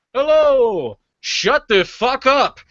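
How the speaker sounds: very high, very loud, echoing New York yell. Act out a performer's announced first impression, a New York echo impression. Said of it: "a New York echo".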